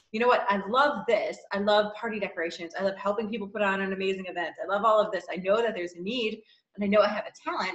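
ordinary delivery

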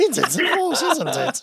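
very high, botched, bad creature voice. Asked by the others to give your Yoda, try it again in a bad Yoda impression. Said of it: "I sound like a bad golem".

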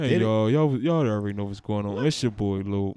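put-on sad tone. Teasing his co-host about how he came on, mock-sad imitation of Lope's intro. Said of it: "That was sad as shit".

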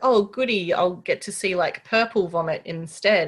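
ordinary talk

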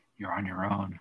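whispering. Retelling what the kid said, whispered. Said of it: "He whispered".

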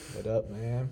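dopey, dim-witted, stoned-sounding dumb voice. Switching into a joke dumb mode to greet the other speaker: put-on dumb voice, sounding high. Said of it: "Paxton, you sound like you're on drugs".

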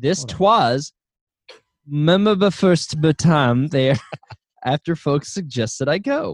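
light put-on Old South Southern belle accent. Asked by another speaker, reading a review aloud in a Gone with the Wind accent. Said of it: "You got to do a little Gone with the Wind accent".

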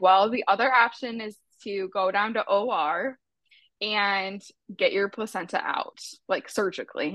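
ordinary delivery

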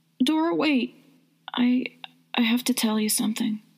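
high voice trembling on every single syllable. A woman stops the other woman to tell her something, voice shaking. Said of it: "Her voice shook".

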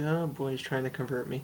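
muttering under breath. An aside while the other speaker keeps talking, muttering under breath. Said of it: "As I say under my breath".

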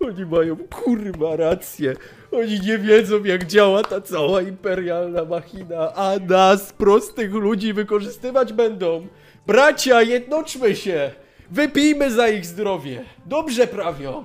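very loud, high, tearful, weepy wailing. Retelling how a man let go of a guard and hugged him; imitating a man crying. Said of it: "zaczyna płakać".

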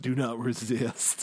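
put-on commercial spokesman voice. Joking with the group in a commercial voice: Brimley's impersonation. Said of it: "Did you like my Brimley's impersonation?".

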